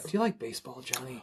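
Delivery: very quiet, calm, soothing and reassuring gentle voice. Describing a voice that would be a little scary to hear, sound calm and reassuring. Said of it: "a very calm, reassuring voice like".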